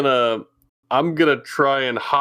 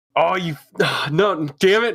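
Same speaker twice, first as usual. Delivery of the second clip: put-on Australian accent, slipping in and out; 4 semitones higher than usual. Player slipping into a character's accent by accident: Australian accent. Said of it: "Now I'm cursed with the Australian".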